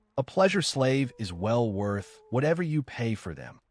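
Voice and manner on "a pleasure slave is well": plain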